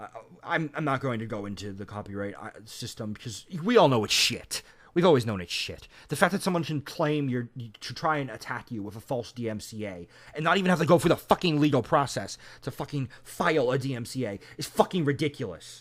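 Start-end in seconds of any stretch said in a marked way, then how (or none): 3.6-15.8 angry, mad, fed-up ranting delivery. Ranting about a false DMCA claim: angry. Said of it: "if I sound angry right now".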